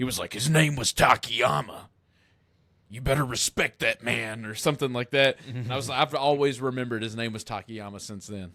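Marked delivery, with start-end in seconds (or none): 0.3-4.5 put-on gruff tough-guy voice. Retelling what another man replied: stereotypical gruff voice. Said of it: "in his stereotypical gruff voice".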